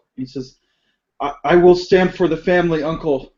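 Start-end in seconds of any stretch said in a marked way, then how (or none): 1.2-3.2 frightened, terrified, halting, stammering voice. Voicing a terrified nephew agreeing to stand for the family: terrified. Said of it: "Fujioka looks very terrified".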